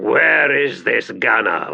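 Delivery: slow, rasping, rough growled voice. Carcer, climbing from the trench, addresses the Sunid, growling. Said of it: "he growled".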